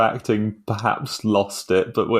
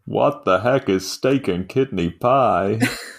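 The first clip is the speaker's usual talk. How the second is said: put-on plain, generic American accent. Joking about the British, ask about their food in a generic American accent. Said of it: "That was an American accent".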